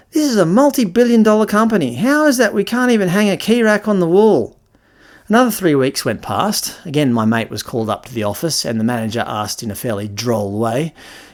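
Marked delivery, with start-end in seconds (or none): 0.1-4.5 mock rant, voice way up high. Retelling the office manager's complaint: imitating a ranting manager. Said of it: "had a bit of a rant".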